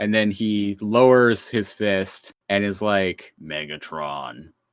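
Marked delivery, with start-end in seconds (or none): 3.4-4.4 low, slow, soft, deeper menacing growly voice. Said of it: "and more growly".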